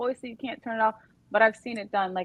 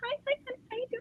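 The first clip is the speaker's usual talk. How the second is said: put-on tiny, very high, hushed little-girl coo; 10 dB quieter than usual. Imitating the godmother greeting her husband: imitating a little-girl voice. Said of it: "she's like a little girl around him".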